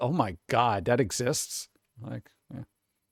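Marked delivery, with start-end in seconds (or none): 0.0-1.7 utterly disgusted, appalled, grossed-out exclamation. Voicing the face of a man in a picture: imitating utter disgust. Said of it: "that look of utter disgust".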